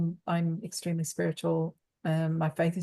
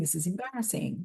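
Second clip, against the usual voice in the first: crying, tearful voice; 4 dB quieter than usual. Retelling a breakdown in the pool: imitating own past crying. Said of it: "I was crying".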